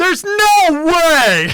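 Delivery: shrill, very high, carrying shout. Retelling what a rival fan across the restaurant did: imitating someone yelling. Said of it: "Yells it at us".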